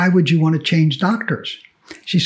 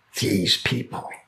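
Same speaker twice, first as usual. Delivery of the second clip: put-on mutter, much lower and quieter; 8 semitones lower, 9 dB quieter than usual. Retelling what a doctor muttered to the nurse: retelling a muttered aside. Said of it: "he mutters under his breath to the nurse".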